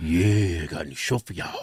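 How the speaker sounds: put-on deep voice. Show host opening the show, fake deep voice. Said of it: "Those are their fake deep voices".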